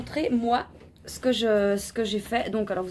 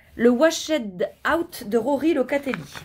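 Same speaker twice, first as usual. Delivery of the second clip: nice, proper English pronunciation throughout. A knitter names the shawl pattern she is making; nice English accent. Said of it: "dit avec un bel accent anglais".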